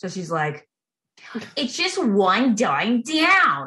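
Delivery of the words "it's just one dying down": put-on over-the-top New England accent, drawn out. Mimicking a woman in a local car dealership ad, exaggerated new england accent. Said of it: "the most exaggerated New England accent".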